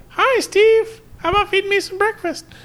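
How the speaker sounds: squeaky little-dog voice, very high pitched. Voicing what a small dog says to steve, in a high-pitched tiny dog voice. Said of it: "It's always really high-pitched".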